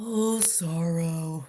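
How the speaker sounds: low, gloomy, defeated-sounding donkey voice. Asked during a chat about Winnie the Pooh characters, doing an Eeyore impression. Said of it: "can you just do an impression of Eeyore".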